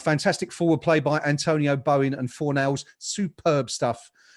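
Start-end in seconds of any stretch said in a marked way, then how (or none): none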